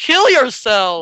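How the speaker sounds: loud, high yelp with voice cracking mid-line. Doing a mock ad pitch for a game server, voice cracking. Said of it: "I totally didn't voice crack right there".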